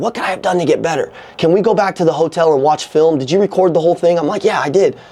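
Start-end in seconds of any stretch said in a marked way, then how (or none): 0.0-1.1 put-on whisper, quieter. Father retells his nine-year-old daughter whispering in his ear, retelling a whisper. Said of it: "she whispers in my ear".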